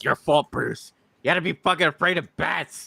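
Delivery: play-acted, very high, playful joking yell. Retelling joking around while watching, imitating own yelling at the TV. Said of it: "yelling at the T V".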